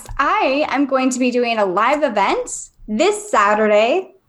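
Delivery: broadcast-style announcer voice. Announcing a live event this saturday: announcer voice. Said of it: "Do I sound like an announcer?".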